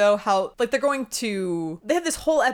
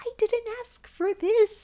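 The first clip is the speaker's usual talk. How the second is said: sad, strangled little voice, very high-pitched; 14 semitones higher, 3 dB quieter than usual. Mocking how the show makes a strangled character sympathetic: mock sad little strangled voice. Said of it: "with her sad little voice because she's been strangled".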